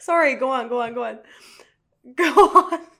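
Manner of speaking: very loud, high-pitched, talking through laughter. Apologizing and telling the other speaker to continue, laughing while talking. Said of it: "I'm still laughing".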